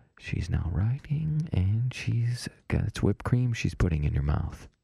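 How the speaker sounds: soft-spoken ASMR-style voice. Guiding a man called Billy Bob through an imagined scene, in an ASMR voice. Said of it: "My MSR voice real quick".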